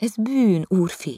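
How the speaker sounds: very high pitch, admonishing, lecturing tone. The girl answers the young master after his oath, lecturing him. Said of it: "leckésztette a lány".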